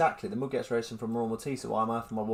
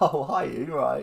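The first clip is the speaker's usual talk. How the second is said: loud, drawn-out, mock feigned surprise; 3 semitones higher, 5 dB louder than usual. Retelling answering a known caller's phone call: imitating feigned surprise on the phone. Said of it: "why am I pretending I don't know who you are".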